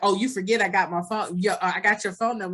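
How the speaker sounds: ordinary delivery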